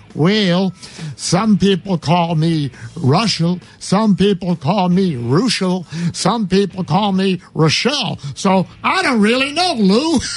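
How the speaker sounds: stretched, drawn-out country drawl. Recall a pitcher answering on the Lead Off Man show, in Rick Reuschel's country drawl. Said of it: "in his country drawl".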